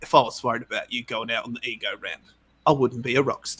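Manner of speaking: soft put-on British rock-star accent. Retelling a conversation, the speaker quotes the other man in a British accent. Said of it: "That's my British accent".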